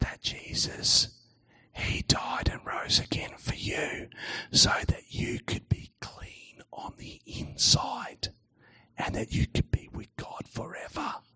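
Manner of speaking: barely audible, very soft whisper. Telling listeners who have come closer an important message, very quiet. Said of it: "I'm going to say it really quietly".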